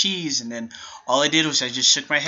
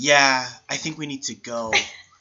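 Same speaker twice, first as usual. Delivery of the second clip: whispered. Retelling what a girl said during a movie: imitating a whisper. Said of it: "and she whispers".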